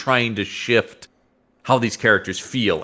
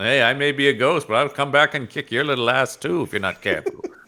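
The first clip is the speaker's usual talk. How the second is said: put-on ornery, cantankerous old-man voice; 4 semitones higher than usual. Riffing on a ghost's lines in a comic: ornery old man Obi-Wan voice. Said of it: "Ornery old man Obi-Wan".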